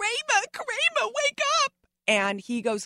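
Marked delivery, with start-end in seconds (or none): 0.0-1.7 play-acted piercing shout, shrill and very high. Retelling a scene where she had to wake a sleeping actor: imitating her own yelling. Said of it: "So I'm yelling".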